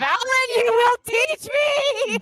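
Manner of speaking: shrill screeching voice. Demanding in character that Valen teach her: screeching. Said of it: "I'm gonna screech".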